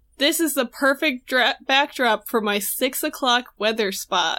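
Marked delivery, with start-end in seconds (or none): none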